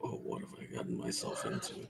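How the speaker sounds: low, soft unvoiced whisper to himself.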